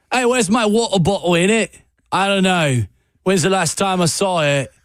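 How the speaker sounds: clumsy, bad fake British accent. Showing how often a bad British accent comes out: bad British accent. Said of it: "I bring out the bad British accent".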